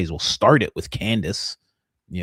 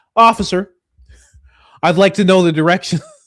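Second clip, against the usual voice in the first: very loud, very high, brash and bold; 12 semitones higher, 10 dB louder than usual.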